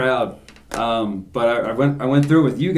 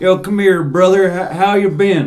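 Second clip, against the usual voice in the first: American Southern accent, pitched up; 6 semitones higher, 3 dB louder than usual. Showing how saying brother sounds in a southern accent. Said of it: "in a Southern accent, if you're like".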